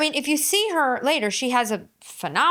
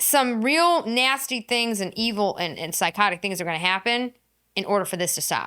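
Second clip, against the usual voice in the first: ordinary delivery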